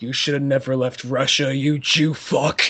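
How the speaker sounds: put-on whisper. Retelling a movie scene, an attacker whispering in someone's ear: imitating a whisper. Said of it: "whispers in his big ears".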